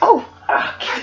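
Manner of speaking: breathy, hushed, whispered sudden outburst. Remembering someone's outburst for friends, retelling a sudden scream. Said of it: "just screamed like".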